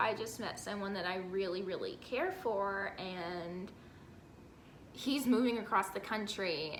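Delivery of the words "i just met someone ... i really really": ordinary delivery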